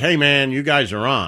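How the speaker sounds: ordinary talk, nothing marked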